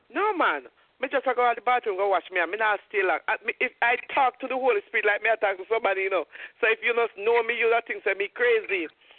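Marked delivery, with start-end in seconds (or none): none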